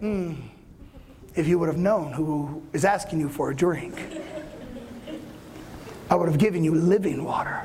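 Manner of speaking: dry, sardonic, mocking, mock-pious tone. Acting out Jesus answering the woman at the well, sarcastic. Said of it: "I think he's being sarcastic".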